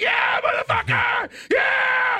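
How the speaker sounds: play-acted shrill, loud, rowdy drunken hollering. Acting out drunk fans cheering at a ribbon cutting: imitating drunk shouting fans. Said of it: "they just get fucking hammered".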